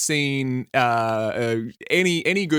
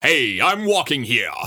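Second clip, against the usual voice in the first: heroic line in Boston accent. Asked for a Boston Superman, trying the line again: deeper Boston Superman voice. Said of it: "But then you got to make it deeper".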